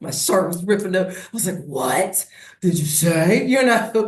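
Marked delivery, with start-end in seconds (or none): 1.6-3.4 slow, seething, furious confrontational tone. Retelling confronting a stranger about a shirt, imitating own angry retort. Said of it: "I got so angry".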